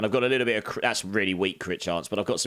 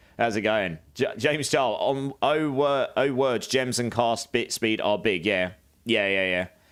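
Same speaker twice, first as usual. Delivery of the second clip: usual speaking voice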